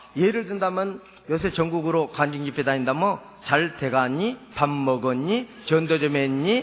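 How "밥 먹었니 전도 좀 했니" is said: Seoul accent with gentle rise on 니. Contrasting Seoul speech with Jeolla speech: Seoul accent, final 니 rising. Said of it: "끝에 자 니자가 살짝 살짝 올라간 것이 서울말이시더라고요".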